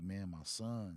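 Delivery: put-on crying, pleading voice. Retelling his father at the hospital bedside: imitating his father crying. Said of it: "he just started crying like".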